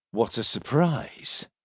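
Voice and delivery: quiet muttering under the breath. Reading a story where a prisoner reacts to an arrest: muttered under breath. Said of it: "muttered Silas under his breath".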